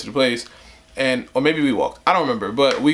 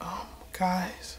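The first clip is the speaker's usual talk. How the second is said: mock little whisper voice, higher and quieter; 6 semitones higher, 14 dB quieter than usual. Retelling how a friend spoke after losing money: imitating a timid whisper. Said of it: "with the little dumbass whisper voice again".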